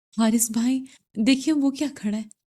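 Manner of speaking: quavering, trembling, frightened voice. Reading a story aloud, a scared character points something out: trembling voice. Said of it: "لرزتی آواز میں بولی".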